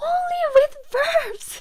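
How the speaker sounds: screaming for emphasis. Teaching that an ending works only with verbs: screaming to emphasize. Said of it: "That's why I'm screaming".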